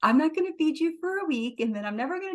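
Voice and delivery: high, sweet, cutesy little voice. Telling pet lovers how you talk to your dog, in a high-pitched cute voice. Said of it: "in like this high-pitched little cute voice".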